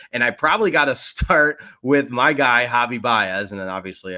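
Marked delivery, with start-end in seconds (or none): 2.1-3.5 loud, sarcastic delivery. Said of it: "I'm being sarcastic with my guy".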